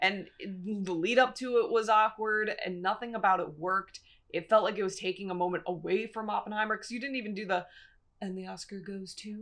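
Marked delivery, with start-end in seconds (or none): 8.2-9.3 very quiet, hushed announcer-style half-whisper. Mocking an awkward awards announcement to the other speaker, half-whispered announcer line. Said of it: "I don't know why you whispered that".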